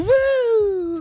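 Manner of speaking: high, loud, mocking woo squeal.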